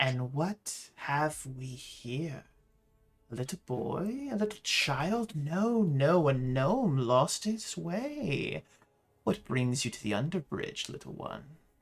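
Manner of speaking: luxurious, sensual, drawn-out cooing voice. Voicing a telepathic creature speaking into a gnome's mind: cooing, luxurious, almost sensual voice. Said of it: "a cooing, beautiful, luxurious, almost sensual voice".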